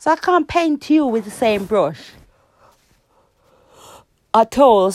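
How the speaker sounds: talking through a yawn. Answering a question about relationships, yawning while talking. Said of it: "I'm yawning again".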